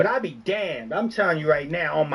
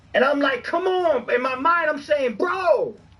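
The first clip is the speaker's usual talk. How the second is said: yelling, much higher; 9 semitones higher than usual. Recounting a questionable play he saw: yelling. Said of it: "I'm sorry, I'm yelling".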